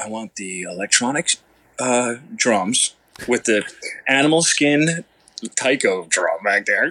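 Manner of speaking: vocal imitation of a drummer. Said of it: "That's a good impression of him".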